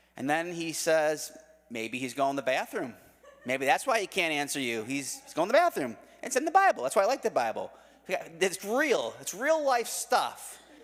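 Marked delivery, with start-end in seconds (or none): none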